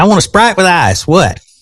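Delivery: put-on high-pitched, twangy Southern American accent. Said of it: "Mom, say".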